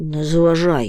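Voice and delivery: grumbling irritably. The Hemul, nose in his list, answers the moomintroll's warning with an irritable grumble. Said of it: "роздратовано буркнув Гемуль".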